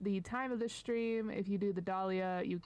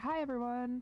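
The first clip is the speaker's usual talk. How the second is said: bright, lively, peppy, pitched-up voice; 5 semitones higher than usual. Showing how the speaker thinks they sound, a peppy greeting. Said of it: "Maybe not that peppy, but you know, like more peppy than what I'm hearing".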